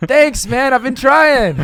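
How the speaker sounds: very high, very loud, sincere and earnest voice. Acting out replies to hateful comments as if taking them kindly: imitating sincere thanks. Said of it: "in a sincere enough way that it doesn't read sarcastic".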